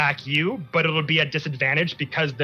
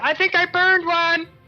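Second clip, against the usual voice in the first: tiny, very high, cutesy little voice; 5 dB louder than usual. Voicing a character calling down from above: cute little voice. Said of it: "this cute little voice say".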